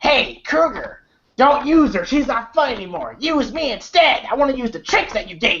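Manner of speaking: taunting slasher villain voice. Retelling a movie scene where a kid talks to Krueger: imitating kid's Freddy voice. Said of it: "he was talking in that Freddy voice".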